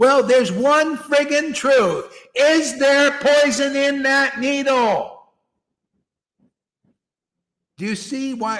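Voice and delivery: loud yelling. Arguing that there is one truth about the needle, yelling. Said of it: "And that's why I'm yelling".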